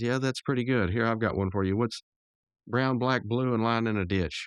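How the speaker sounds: plain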